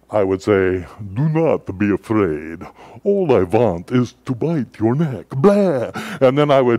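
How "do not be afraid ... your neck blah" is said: storybook vampire count voice. A parent recalls tucking a child in at night, in Count Dracula voice. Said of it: "in my best Count Dracula voice".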